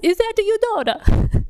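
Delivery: very high, clumsy, fake Italian accent. Daughter retelling an italian woman's question to her dad, bad italian accent. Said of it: "Pardon my bad Italian accent".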